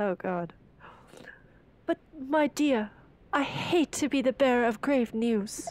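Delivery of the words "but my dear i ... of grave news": comforting, consoling, hammy character voice. Playing a lighthouse keeper breaking news to a storm survivor, consoling lighthouse keeper voice.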